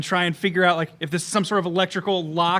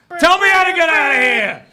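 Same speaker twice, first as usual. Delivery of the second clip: acted, very loud, very shrill, high demanding yell; 11 semitones higher, 10 dB louder than usual. Announcing the character's presence after blowing the door off: in-character yell. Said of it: "'Cause I'm yelling it".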